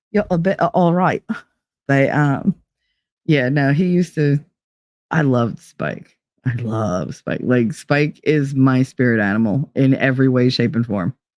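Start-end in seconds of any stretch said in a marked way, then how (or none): 0.2-1.3 put-on Cockney accent. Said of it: "you can thank Spike".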